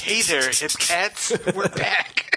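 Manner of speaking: soft jazz radio DJ announcer voice. Teasing a co-host about how they opened the show: soft jazz radio DJ impression. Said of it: "like you were like a, a soft jazz radio D J".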